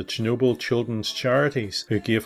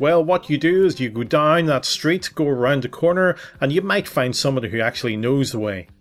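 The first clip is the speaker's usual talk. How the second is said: put-on American accent throughout; 3 semitones higher than usual. Retelling a gentleman giving directions when they were lost, in a put-on American accent. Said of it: "With an American accent".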